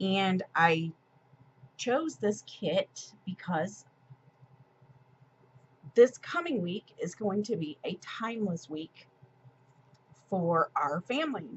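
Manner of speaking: emotional, choked up, voice catching and breaking. Talking about a sticker kit chosen for the family's week, getting choked up. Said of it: "I'm getting a little choked up".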